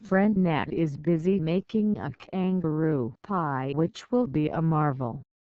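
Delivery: ordinary delivery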